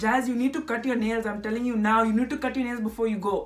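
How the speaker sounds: put-on Indian accent, old woman voice. Retelling what the grandmother said about cutting nails: Indian accent imitating grandmother. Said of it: "I'll do the Indian accent".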